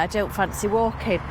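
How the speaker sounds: normal talking voice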